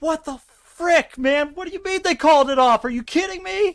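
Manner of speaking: put-on very high, fast, frantic, disbelieving outburst. Retelling reacting to a goal being called off: retelling own frantic outburst. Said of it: "I am losing my shit".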